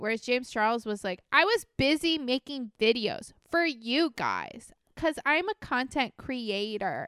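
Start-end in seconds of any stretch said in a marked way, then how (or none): 1.3-7.1 defensive, animated delivery with swooping pitch. Retelling how James Charles answered critics: James Charles impression. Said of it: "Flawless impression".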